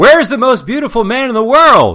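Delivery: shrill, very loud, high-pitched shout. Recounting a man in the auditorium calling out, retelling a man's shout. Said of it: "he just shouts".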